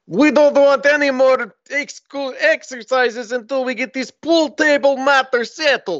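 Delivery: put-on thick Russian accent.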